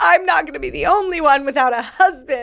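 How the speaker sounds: put-on dramatic pleading tone. Retelling what she said when she called him: retelling a dramatic line.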